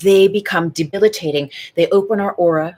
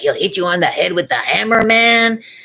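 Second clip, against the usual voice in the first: put-on Latin American accent in preacher style. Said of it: "I'm doing an impression of him".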